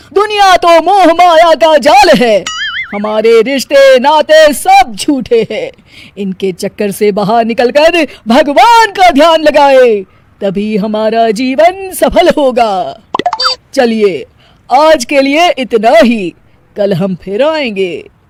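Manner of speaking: preachy, sermonizing TV guru sermon delivery. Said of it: "एक दिन TV पर [name] का प्रवचन चल रहा था। / एक दिन टीवी पर [name] का प्रवचन चल रहा था।".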